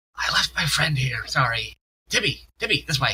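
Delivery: awkward, hushed half-whispered words. Voicing a character poking his head through a door to half-whisper: half-whispering in character. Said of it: "pokes his head in to whisper".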